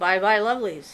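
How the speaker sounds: ordinary delivery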